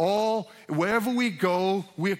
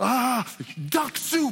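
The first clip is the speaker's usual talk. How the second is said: upset, high-pitched put-on exclaiming. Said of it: "when he would get upset, he would go".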